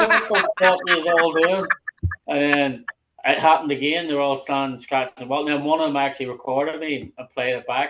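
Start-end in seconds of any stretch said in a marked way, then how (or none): 0.0-1.7 loud, high exasperated yell.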